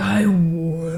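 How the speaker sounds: voice dropped as deep as it goes. Imitating a voice that came out of you: extremely deep voice. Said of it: "Extremely deep?".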